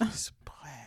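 put-on whisper. Imitating nervous people who avoid saying dark skin: imitating someone whispering. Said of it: "Why are you whispering?".

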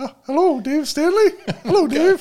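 very high-pitched put-on phone voice. A co-host answers a pretend phone call in a dad-joke bit, unusually high-pitched voice. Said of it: "it sounds like your voice got even higher".

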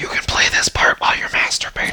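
hushed whisper. Signing off the podcast to listeners, in a whisper. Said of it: "In a whisper".

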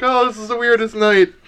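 high cackle running through the words. Narrating a scene and voicing a character, cackling Loretta voice. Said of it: "Loretta cackles".

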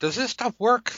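put-on very high, squeaky little kid voice. Acting out your ten-year-old self, in a squeaky voice. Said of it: "squeaky voice".

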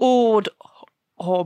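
put-on Northern English accent. Repeating a name in Northern after another speaker asks, Northern English accent. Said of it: "I'll try that again in Northern".

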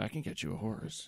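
creepy put-on voice. Playing a stranger offering a kid a horse: creepy stranger voice. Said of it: "Why is there two creepy people now?".

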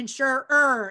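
insurer with heavy stress on the -er ending. Saying the word insurer in a funny way, stressing the ending; stress the -er in insurer. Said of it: "emphasize the ED and the ER".

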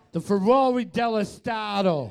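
high Boston accent. Repeating the same phrase again, now in a Boston accent. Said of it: "Now say it in a Boston accent".

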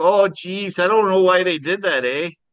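put-on Minnesotan accent on every word. Imagining how the owners would react on coming back, in a Minnesotan accent. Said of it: "That's how Minnesotans sound".

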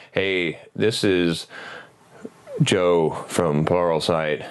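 very low, slow, dull, droning flat monotone. Mocking monotone narrators introducing an Android development course, in a mock flat monotone. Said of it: "the monotone people that are like".

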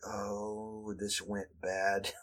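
soft, slow, dismayed groan. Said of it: "everyone there's like".

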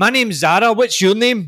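put-on aggressive Glaswegian accent. Retelling how a friend from Glasgow introduced herself to new people, imitating Zara's aggressive Glasgow accent. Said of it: "the aggressiveness of how she said that".

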